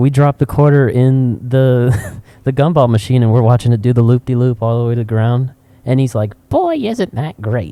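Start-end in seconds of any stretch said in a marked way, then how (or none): 6.5-7.7 put-on very high-pitched, old-fashioned, old-timey grandpa voice. Retelling a man at a gumball machine, a speaker does a 1920s grandfather voice. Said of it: "one of these like nineteen twenties grandfathers".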